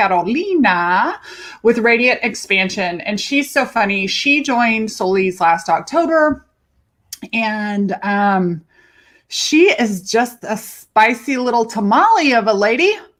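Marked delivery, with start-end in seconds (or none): 0.0-1.2 Carolina pronounced in a Spanish accent. Introducing a client by name: Spanish-speaking accent. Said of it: "I always say it in my Spanish speaking accent".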